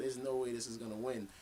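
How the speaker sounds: ordinary talk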